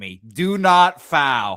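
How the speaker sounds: put-on loud, very slow, stretched-out scream. Retelling watching a game at a birthday party: retelling a scream. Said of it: "I'm screaming".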